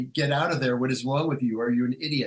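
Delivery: normal talking voice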